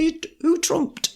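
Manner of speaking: very high, put-on Yorkshire accent. Quoting how people in northern England ask about trumps, put-on Yorkshire accent. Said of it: "my excellent Yorkshire accent".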